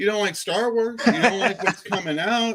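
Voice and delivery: worked-up, high ranting voice. Doing Drew complaining about Star Wars: imitating Drew. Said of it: "I'm doing Drew now".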